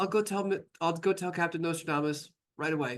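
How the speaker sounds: acted, shaky, tremulous, jittery nervous voice. Retelling the last voice to sign out: imitating a shaky voice. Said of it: "there's like this one shaky voice".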